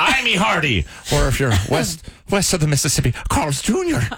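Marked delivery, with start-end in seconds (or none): 0.0-0.9 put-on pirate accent, higher and slower. Making an awful joke in a pirate accent. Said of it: "whenever I do a pirate accent".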